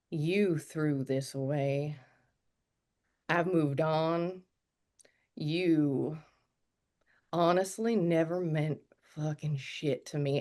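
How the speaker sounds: rage-filled, seething half-whisper muttered under the breath. Retelling what the speaker said to her face to face, half-whispering under breath. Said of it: "I whisper under my breath".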